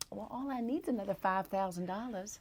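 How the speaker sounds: put-on charming Southern US accent. Recalling how they would talk in early business deals: their Southern accent. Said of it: "And so my Southern accent, I would be like".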